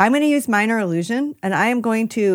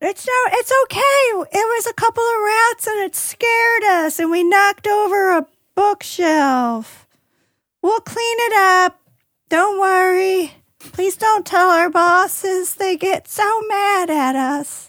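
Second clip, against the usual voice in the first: very high-pitched halfling character voice; 9 semitones higher than usual. A player disguises their voice as one of the halfling workers: high-pitched halfling worker voice. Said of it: "like one of the halfling workers. / and you're like in that high pitched voice".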